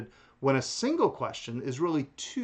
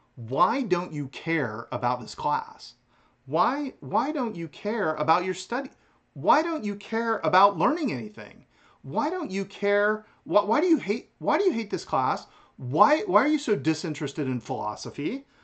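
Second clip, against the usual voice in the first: mock accusing, grilling tone with raised pitch; 6 semitones higher, 4 dB louder than usual. Speaker poses questions to the philosophy class, unable to keep a straight face: mock accusing. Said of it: "I can't do this with a straight face".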